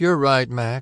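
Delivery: oddly changed voice. Narrator reading a woman's reply as she gazes out the window, strangely quiet tone. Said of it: "she said in a strangely quiet tone".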